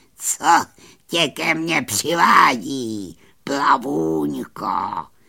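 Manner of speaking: croaking whisper. A witch greets the little fairy who has come to her, croaking in a whispery voice. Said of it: "Zaskuhrala vyšeptalým hlasem".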